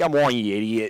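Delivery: put-on, loud, exasperated, angry yelling. Picturing a viewer in an easy chair getting mad: imitating an angry viewer. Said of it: "getting real mad at me".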